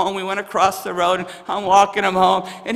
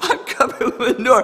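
put-on tearful, crying voice; 4 semitones higher than usual. Speaker retells pulling someone out of a manure pit, imitating someone crying. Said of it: "And he's like crying".

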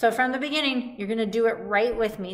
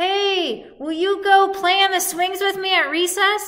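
very high, friendly, drawn-out calling-out voice; 9 semitones higher, 5 dB louder than usual. Demonstrating a calling voice, not a yell, as if inviting a friend: slightly louder calling voice. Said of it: "I'm just making my voice a little bit louder".

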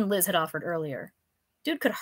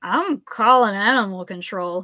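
put-on drunken slur, louder and slower; 7 dB louder than usual. A stumbling man who fell into the narrator's arms speaks, in a drunken slur. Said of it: "he slurred".

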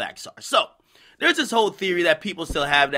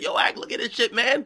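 high voice, talking through hysterical laughter; 6 semitones higher than usual. Quoting a man who called on FaceTime: retelling hysterical laughing. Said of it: "he called me fucking hysterically laughing on FaceTime".

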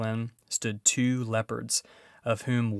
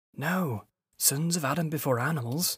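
whispered, higher pitch; 4 semitones higher than usual. Narrating a beaver's reply back to a boy, whispered. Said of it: "whispered Mr. Beaver back again".

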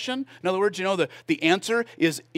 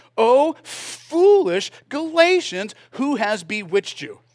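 loud, drawn-out, snarky, sarcastic exclamation; 3 semitones higher, 6 dB louder than usual. Quoting Paul opening the section: snarky Paul. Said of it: "So he starts off a little snarky".

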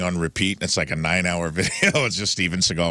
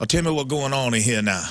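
fake, bad, laid-on Louisiana accent; 6 semitones higher than usual. Telling about a parish sheriff who put on a character, the speaker quotes him: bad Cajun accent. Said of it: "doing a bad Cajun accent".

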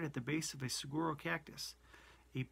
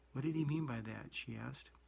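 usual speaking voice

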